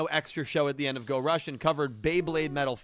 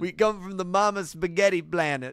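clichéd put-on Italian accent; 3 semitones higher than usual. Friends drawing together, asked to do a stereotypical italian accent. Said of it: "do your stereotypical like Italian voice".

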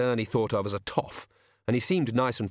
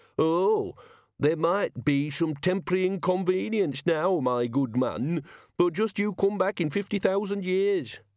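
pinched, strangled, nasal put-on voice, pitched up; 7 semitones higher than usual. A man retells what the head wizard told him, in a strangled nasal voice. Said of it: "He put on a strangled nasal voice".

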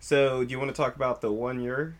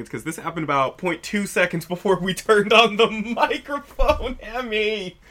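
very loud, high, words broken up by laughter; 7 semitones higher, 9 dB louder than usual. Explaining something funny that happened just before recording: laughing while talking. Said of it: "if you're wondering why I'm laughing".

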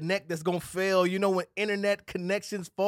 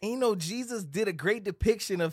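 ordinary talk

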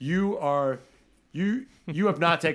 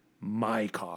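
put-on entitled royal tone, lower and quieter; 5 semitones lower, 7 dB quieter than usual. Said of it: "it was so entitled and royal".

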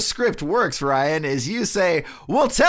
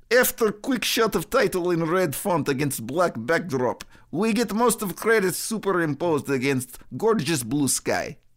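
clumsy, really bad put-on Russian accent; 3 semitones lower, 5 dB quieter than usual. Trying out accents, a speaker reads a movie's opening description in a really bad Russian accent. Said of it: "I have a really bad Russian accent, so let's try that one".

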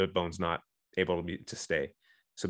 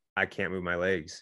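usual speaking voice

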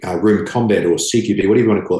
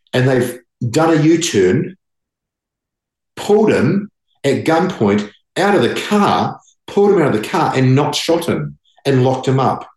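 worked-up, proud, excited speech in a raised voice; 4 semitones higher than usual. Telling a story about everyday police officers the speaker is proud of: raised excited voice. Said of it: "I'm raising my voice".

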